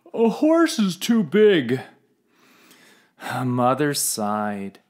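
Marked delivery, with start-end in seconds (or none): 0.1-1.8 yawning, much higher. A narrator reads the father's answer to the child's plea for a horse, yawning. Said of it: "Father yawned".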